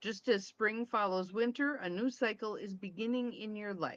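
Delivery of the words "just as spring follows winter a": ordinary delivery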